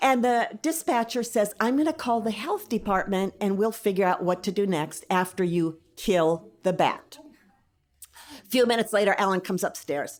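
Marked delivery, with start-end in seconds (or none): none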